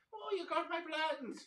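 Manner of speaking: put-on Irish accent with very high voice. Imitating another speaker's remark, put-on Irish accent. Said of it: "it'd be like an Irish".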